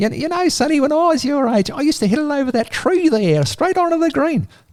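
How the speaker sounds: very high, little squeaky voice. Retelling a round of golf, quoting Don Bradman in a squeaky Don Bradman voice. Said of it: "Don Bradman had this little squeaky voice".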